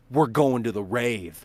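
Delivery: ordinary talk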